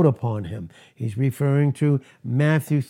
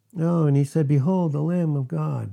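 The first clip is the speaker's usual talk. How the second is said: flat, offhand, unexcited casual reading; 3 semitones higher than usual. Showing how people flatly read the verse: flat casual reading. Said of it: "We can read this and like".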